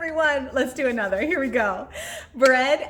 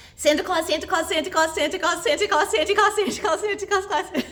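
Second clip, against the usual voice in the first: high, rushed, very fast; 5 semitones higher than usual. Leading listeners at home through a speed-repeating exercise: as fast as possible. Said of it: "as fast as we can".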